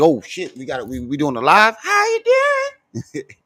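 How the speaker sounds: high, sing-song pimple voice. Joking that a pimple on someone's forehead speaks: voicing a talking pimple. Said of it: "that big ass pimple on your forehead that's just sticking out like".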